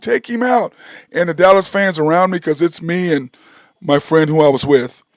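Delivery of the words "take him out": play-acted, high-pitched screaming, yelling voice. Retelling watching a game, imitating own screaming: Take him out. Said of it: "I'm sitting there screaming".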